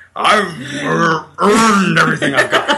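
bad put-on presidential voice, loud, slow, booming. Doing a deliberately bad impression that names itself: bad Richard Nixon impression. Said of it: "I'm Richard Nixon".

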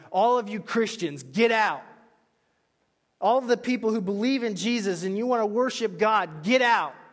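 very loud, high-pitched yell. Retelling a joke about gunmen in a church: imitating gunmen yelling. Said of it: "they start yelling".

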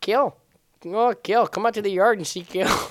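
silly, high-pitched, laid-on put-on Canadian accent. Asked what voice he's doing, he shows it off in a Canadian accent. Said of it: "you're doing some Canadian accent".

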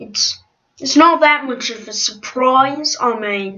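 put-on British accent. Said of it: "this is my British accent".

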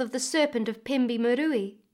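plain

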